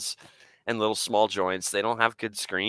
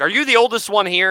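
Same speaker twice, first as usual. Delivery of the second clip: high, irate, angry, demanding barking yell; 12 semitones higher, 9 dB louder than usual. Retelling a man confronting the kids after a movie, imitating someone yelling. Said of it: "he was yelling at all the kids".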